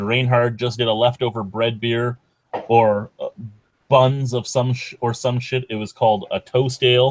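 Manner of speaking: ordinary talk, nothing marked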